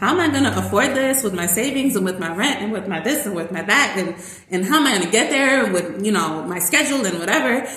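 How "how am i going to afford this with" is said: usual speaking voice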